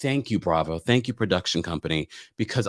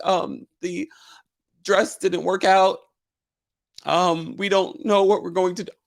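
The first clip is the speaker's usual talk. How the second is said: mock very high, wobbly, shaky, upset voice; 9 semitones higher than usual. Recounting Shannon at the top of the reunion, imitating Shannon's shaky upset voice. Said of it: "like when she's upset, shaky voice".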